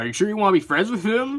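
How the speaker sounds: goofy voice, high-pitched and quick. Pitching how a character could come back, a goofier Muffin voice. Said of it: "I imagine Muffin would be a bit goofier".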